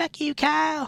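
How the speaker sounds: grown-up cartoon voice, pitched very high. Retelling a cartoon's ending: Cartman's grown-up voice. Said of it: "in his grown-up voice".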